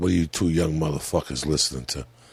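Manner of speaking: mock stoned, high-sounding voice. Retelling a drugged-up older brother interrupting the kids: imitating someone high. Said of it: "all fucked up".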